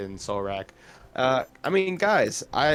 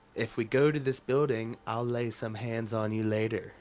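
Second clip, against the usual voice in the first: sly, sidelong, hushed half-whisper; 3 semitones lower, 4 dB quieter than usual. Sliding over next to Solrak during the game, speak to him, half-whispered. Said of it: "and just whisper".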